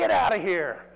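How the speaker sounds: high, very loud, full-throated scream. Retelling the moment a home run was hit: retelling a scream. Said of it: "I screamed".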